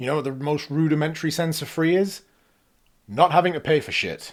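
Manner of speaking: worked-up outburst. Criticizing a reviewer's comments on a free game, worked up. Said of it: "got a little worked up there".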